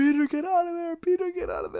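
acted-out, very high-pitched, swooping scream. Retelling a movie scene where someone screams outside: imitating Happy screaming. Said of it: "Happy outside screaming".

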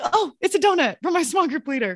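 jittery, high-pitched voice. Retelling a student called to the office: imitating a nervous student. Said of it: "Chris gets all nervous".

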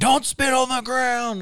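put-on very high, slow, drawn-out shout. Retelling how a man told someone not to spit: imitating someone yelling. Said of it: "the guy yelled at him".

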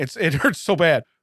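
teary voice, crying with laughter through the words. Speaker tells the audience they are crying as they talk; crying. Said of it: "I'm I'm crying".

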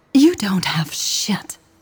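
spoken in a hiss. Michelle, face close to the camera, confronts the other woman: hissed. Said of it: "she hissed".

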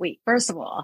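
ordinary talk, nothing marked

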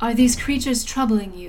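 loud, very commanding voice, firm authority. Narrator voicing a woman arriving in the middle of battle, speaking in common: very commanding voice. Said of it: "in a very commanding voice".

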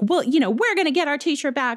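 mock, high, really indignant sort-of yell. Recapping a scene where two characters yell at him, retelling an indignant yell. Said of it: "sort of yell at him really indignant".

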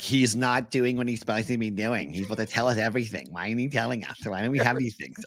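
put-on whiny reporter voice. Imitating a whiny media member who complains: mock-whiny media member voice. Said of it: "it's a whiny media member of like".

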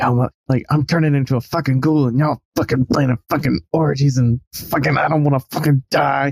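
furious, angry, pissed-off grumbling rant. Recapping how Earl keeps complaining while the others carry on, retelling angry muttering. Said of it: "still muttering, like pissed off".

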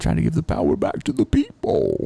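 rough, raspy, very high villain voice. Discussing Batman villains, the speaker answers in a Bane voice. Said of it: "That was a good Bane voice".

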